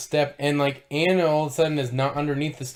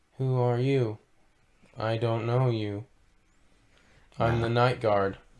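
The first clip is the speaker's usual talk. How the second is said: flat robotic put-on voice, lower pitch; 4 semitones lower than usual. Acting out a night guard's movie line: text-to-speech Jimmy Stewart voice. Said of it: "he sounded like text-to-speech Jimmy Stewart".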